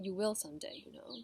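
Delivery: ordinary delivery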